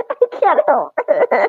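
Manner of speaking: slow, giggling and laughing through the words. Getting a massage while others watch, laughing while talking. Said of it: "She's moaning and crying".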